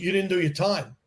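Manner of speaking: ordinary talk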